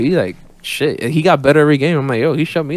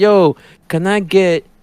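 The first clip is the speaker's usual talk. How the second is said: imitated Greek-Nigerian accent, pitched higher; 5 semitones higher than usual. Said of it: "you know his accent".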